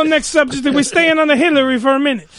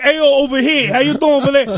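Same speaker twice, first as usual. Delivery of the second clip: easygoing Brooklyn accent; 2 semitones lower than usual. Arguing with another speaker about a fake Italian accent, the speaker demonstrates how Brooklyn sounds in a Brooklyn accent. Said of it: "because Brooklyn's like".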